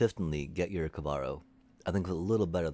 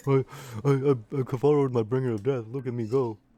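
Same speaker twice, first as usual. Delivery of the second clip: high, loud, mocking, bragging show-off parody voice; 7 semitones higher, 5 dB louder than usual. Mimicking an opponent bragging about a win: mocking imitation of a noob. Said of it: "I didn't mean to mock you".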